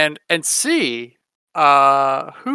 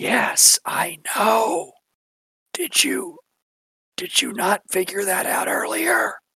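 whispered, higher pitch; 3 semitones higher, 6 dB quieter than usual. A character leans in and answers another character, whispering back. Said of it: "Lean in and whisper back and go".

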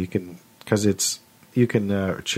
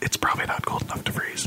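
soft, conspiratorial whisper. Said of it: "whispering conspiratorially".

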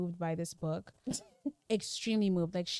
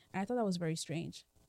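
ordinary talk

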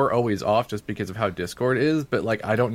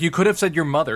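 put-on screaming, higher; 6 semitones higher than usual. Retelling a street segment where the guy screams at someone: imitating someone screaming. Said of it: "And he just screams".

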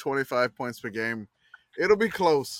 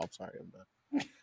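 ordinary talk, nothing marked

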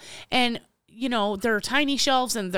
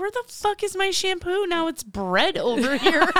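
bewildered, confused swearing outburst, pitched up and slow; 8 semitones higher than usual. Retelling walking into the rearranged store, imitating own confused outburst. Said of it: "I walked in and I was like".

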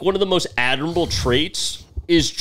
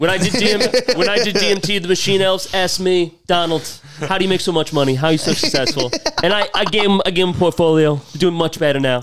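poorly done put-on Boston accent. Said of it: "And that's [name]'s Boston accent".

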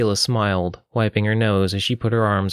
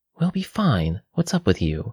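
voiced stage whisper. Narrator reading a woman's line to a crying friend in a story, half-whispered. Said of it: "Nadia whispered".

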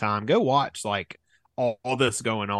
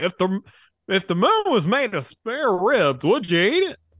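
put-on baseball announcer voice, higher and louder; 10 semitones higher, 5 dB louder than usual. Recalling a comedy sketch, doing a Harry Caray impression. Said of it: "he's acting like Harry Caray and he's like".

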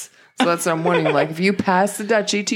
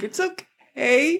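mock high voice on the verge of tears; 9 semitones higher than usual. Retelling what they say to the mirror, mock about to cry. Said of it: "Why you sound like you're about to cry?".

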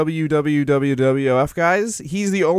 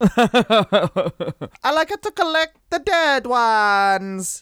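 very slow, drawn-out, high-pitched put-on Italian accent; 6 semitones higher than usual. Joking about a wrestler's closet of skeletons: put-on italian accent. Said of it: "He's Italian now".

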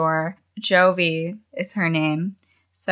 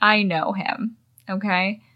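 plain

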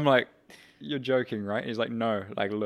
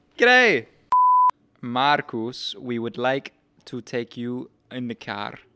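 put-on Spanish-accented voice, louder; 6 dB louder than usual. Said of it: "Great impression".

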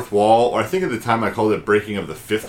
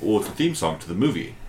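put-on dry, unfazed, matter-of-fact tone; 4 dB quieter than usual. Retelling a movie scene, Adam Driver answering Bill Murray, Adam Driver deadpan. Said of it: "Adam Driver just deadpan like".

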